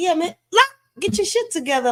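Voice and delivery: put-on very high-pitched, old voice with scolding tone. Imitating how an old head would react to that voice: imitating an old head's reaction. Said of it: "if I was to talk like this to one of my old heads".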